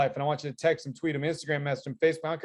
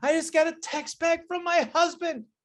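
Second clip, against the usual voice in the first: shrill, high-pitched yell carrying across a distance; 13 semitones higher than usual. Retelling an audience member calling out from the back of the room: imitating someone yelling. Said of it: "she yells from the back of the room".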